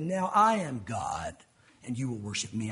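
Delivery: very deep, low, evil villain voice. Speaker voicing what Satan will say through that man, Satan voice. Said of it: "I can't do a good voice".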